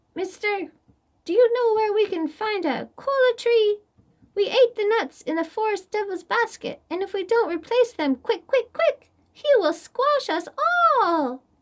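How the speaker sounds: wee, tiny, squeaky, very high voice. A narrator reading a folktale voices the ant leader asking Koi, tiny voice. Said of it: "The ant leader called in a tiny voice".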